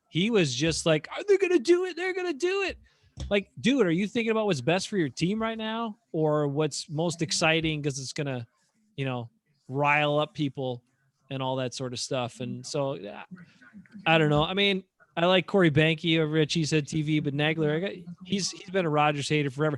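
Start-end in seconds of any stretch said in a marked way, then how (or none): 1.2-2.8 very high-pitched, giddy, tipsy, excited squeal. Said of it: "and he was giddy".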